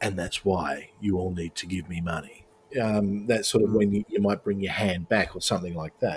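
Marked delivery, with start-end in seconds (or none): 0.0-2.5 eased-down, gentle, softened, quiet delivery. Showing how a speaker softens down to a closing line: softened, quieter delivery. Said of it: "when you wanna soften it down to".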